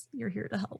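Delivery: wicked, knowing, sly, devilish tone. Voicing Scarlet repeating an offer to help: devilish smiling delivery. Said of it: "there is this devilish smile on Scarlet's face when he says".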